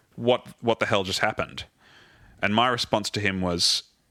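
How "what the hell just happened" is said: grave, very stern, severe, serious tone. Retelling a high-stress moment when the artistic director turned to him, imitating the director's stern question. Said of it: "very sternly".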